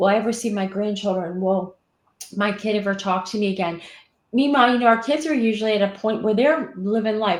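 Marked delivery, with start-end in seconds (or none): none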